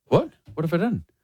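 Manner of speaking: ordinary talk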